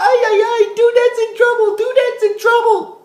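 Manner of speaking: very high, level, monotone panicked squeal. Retelling how Alpha reacts to the alarm: imitating Alpha freaking out. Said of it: "Alpha starts freaking out and he said".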